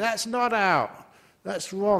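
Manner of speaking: acted-out, high, loud screaming. Speaker describing cricket fans disputing a call on tv, imitating a scream at the tv. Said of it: "you scream at the TV".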